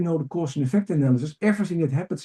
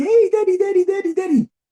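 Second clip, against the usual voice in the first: put-on very high, delighted, excited four-year-old voice; 6 dB louder than usual. Acting out a four-year-old greeting the father coming home: imitating a happy four-year-old. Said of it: "the little kid of four is totally happy".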